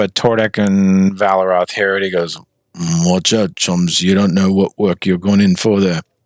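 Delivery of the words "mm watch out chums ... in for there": muttering under breath, much lower. A bartender speaks to two characters, muttered under his breath. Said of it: "kind of says under his breath".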